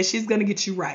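ordinary delivery

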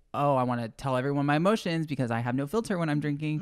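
ordinary talk

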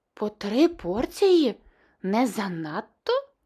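surprised, astonished. The princess reacts to the chief adviser ordering extra ice cream, surprised. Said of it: "здивувалася принцеса".

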